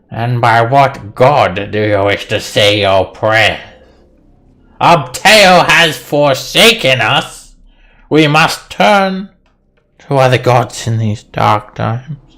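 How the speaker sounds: loud, grumbly, complaining voice. A game master voices a character answering Talum, grumbling. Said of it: "She uh she grumbles to you".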